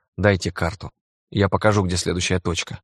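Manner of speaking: ordinary delivery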